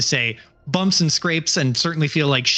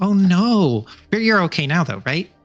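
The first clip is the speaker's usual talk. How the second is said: put-on little voice like a small toddler; 4 semitones higher, 3 dB louder than usual. Voicing a character asking whether someone is okay now: voice like a toddler speaking. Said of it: "like listening to a toddler speak".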